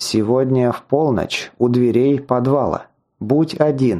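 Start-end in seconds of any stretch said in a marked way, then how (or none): none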